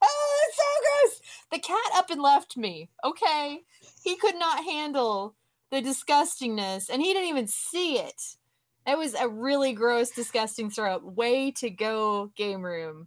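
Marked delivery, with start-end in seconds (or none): 0.0-1.2 very high, grossed-out scream of disgust. Recalling grossing out at a vomit scene on the couch, retelling a disgusted scream. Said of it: "I was screaming like".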